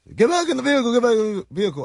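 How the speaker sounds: mock very high, shrill, yelled police voice. Speaker retells a man pointing a gun at him, imitating him yelling. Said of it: "we're yelling at each other".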